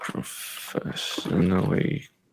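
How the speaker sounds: slow, soft, dictating voice. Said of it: "I'm just demonstrating something".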